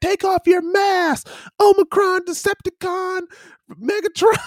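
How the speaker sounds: put-on shrill, very high, drawn-out New Zealand accent scream. Retelling what a man at a bus stop screamed: imitating a screaming man with Kiwi accent. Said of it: "screaming this in a Kiwi accent".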